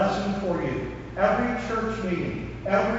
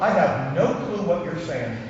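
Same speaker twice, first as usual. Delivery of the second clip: ordinary talk, nothing marked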